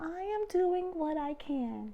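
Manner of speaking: very high, tiny hummingbird voice. Narrator voicing a tiny hummingbird answering back, in a tiny voice. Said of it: "answered in her tiny voice".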